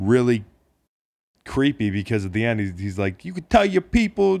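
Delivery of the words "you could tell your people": put-on high, botched New England accent. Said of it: "I can't do the fucking accent".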